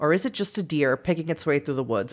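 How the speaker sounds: ordinary delivery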